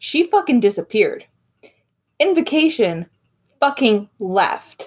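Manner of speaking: fairly angry, heated outburst. A character storms out of the room and brushes past the group, angry. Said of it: "You sound angry".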